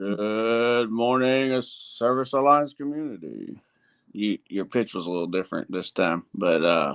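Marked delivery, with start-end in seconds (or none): 0.0-3.6 slow radio announcer voice, "good" drawn out. Copying the other speaker's morning greeting, imitating his radio voice. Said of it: "trying to sync my, my voice with yours".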